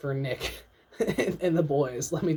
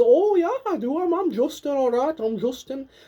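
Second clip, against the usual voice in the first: terrible put-on, very high, loud leprechaun accent; 11 semitones higher, 7 dB louder than usual. Imagining a friend talking, the speaker does a terrible leprechaun accent. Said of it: "a terrible like leprechaun accent".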